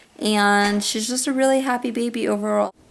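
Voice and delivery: normal talking voice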